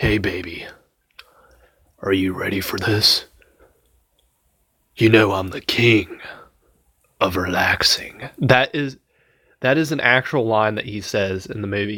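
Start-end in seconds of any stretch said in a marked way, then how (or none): 0.0-8.3 creepy, sinister, predatory sweet-talking tone. Quoting a man's lines from a movie, imitating a creepy murderer-like voice.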